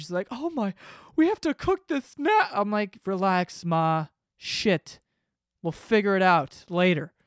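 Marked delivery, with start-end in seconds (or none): 0.3-2.5 very high, gushing, all-excited voice. Quoting mom about cooking the food, imitating excited mom. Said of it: "So she was all excited or whatever".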